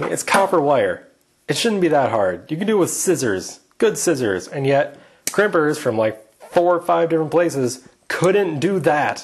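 a little annoyed, mildly angry griping. Speaker complains to another person about work tools, a little angry. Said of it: "You sound a little angry".

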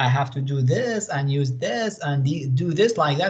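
ordinary talk, nothing marked

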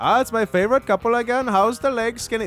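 high taxi driver voice. Narrating the scene, the speaker voices the cab driver turning to the couple, higher voice. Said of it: "This guy's a higher voice".

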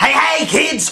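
very high-pitched, loud cartoon clown voice. Doing a run of voice impressions, the speaker switches to a cartoon clown impression. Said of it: "do some of my voice impressions".

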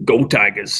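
barely intelligible voice, words mushed together. Asked for it as a fun game to end on, do your best Ed Orgeron impersonation. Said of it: "Do your best Ed Orgeron impersonation".

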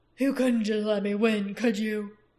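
pained growl in an undertone. A narrator reads a beaten character's remark to the victor, growled in an undertone. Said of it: "he growled in an undertone".

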